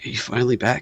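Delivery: quiet, hushed half-whisper. Playing a character who holds a hug and asks a question: half-whispering. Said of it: "he'll sit there and he'll whisper".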